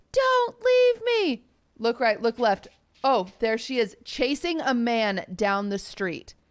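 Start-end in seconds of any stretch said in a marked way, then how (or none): 0.2-1.5 put-on woman's scream, higher. Retelling a woman chasing a man down the street: imitating a woman screaming. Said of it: "Screaming out of the top of her lungs".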